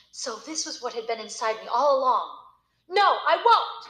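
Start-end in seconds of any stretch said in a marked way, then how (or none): 2.8-3.7 loud, high, defiant scream. The narrator refusing her, just before being pulled toward the piano, screamed. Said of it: "I screamed".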